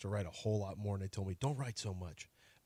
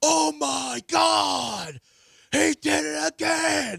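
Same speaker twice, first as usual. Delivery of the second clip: very high, very slow, creaky, drawn-out wail; 7 dB louder than usual. Retelling hearing his son from the shower: imitating son screaming. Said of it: "Why are you screaming?".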